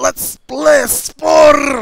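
put-on very loud, high, shrill, booming, angry ranting Scottish accent. Joking about how a line sounded, the speaker redoes it as a mock-angry Scotsman. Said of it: "sounded more like an angry Scotsman".

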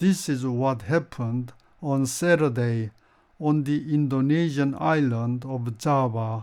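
very slow, careful, easy-to-follow English news reading.

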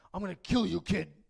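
put-on frustrated, angry voice. Retelling a movie scene where a tied-up robber threatens a kid: imitating a frustrated robber. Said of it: "because he's so frustrated".

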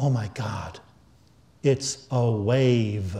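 whisper under the breath. Retelling a student's reaction to an equation, imitating a whisper under his breath. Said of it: "whispered under his breath".

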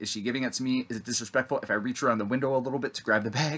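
plain

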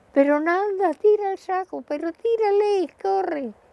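mock very high shouted delivery. Recalling planes overhead, the speaker acts out her neighbours shouting at her.

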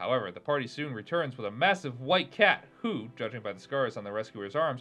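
ordinary delivery, nothing marked

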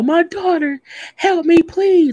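play-acted, very high, drawn-out tearful crying plea. Retelling a TV scene where Eddie begged for help: imitating Eddie crying and begging. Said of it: "When Eddie was on the ground crying".

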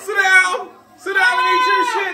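loud, high-pitched yelling.

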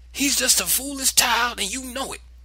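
flaring, very high outburst. Narrator reading Granny's reply to Ella's apology, blazing. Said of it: "Granny blazed".

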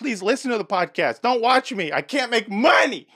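shouting, shrill and very high-pitched. Podcast host addressing the audience, yelling. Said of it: "Sorry for yelling".

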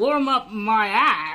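drawn out, very slow and loud. Asked by the other speaker to say the line: Christopher Walken voice. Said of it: "Say it like, uh, Christopher Walken".

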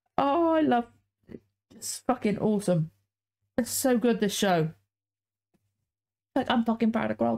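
tearful, crying voice. Talking about the show, crying again. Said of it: "Fuck, I'm crying again".

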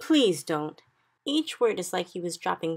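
ordinary delivery

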